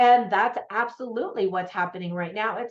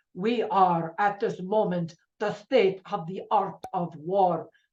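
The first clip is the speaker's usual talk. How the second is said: bad, terrible put-on Russian accent. Quoting a Russian submarine captain's line: bad Russian accent. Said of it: "that's a pretty terrible accent".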